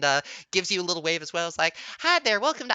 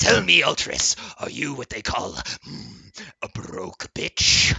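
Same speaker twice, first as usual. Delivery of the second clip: low, slow, intense, close, leaning-in voice; 6 semitones lower than usual. A tentacled pool merchant addresses the customer Ultris, in a closer, more intense voice. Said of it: "Uh, and you feel the voice get a little bit closer and more intense as the tentacles splash around in the pool, / what we must ask any of our new customers".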